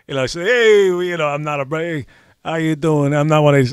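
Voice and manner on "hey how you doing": put-on New York accent, quieter. Talking about being from new york, doing a new york accent. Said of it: "definitely not New York".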